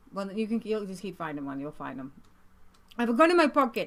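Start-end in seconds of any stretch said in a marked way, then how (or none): 2.9-3.8 put-on Middle Eastern accent. Repeating a film character's line the way he says it: Middle Eastern accent. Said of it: "That's the way he says it".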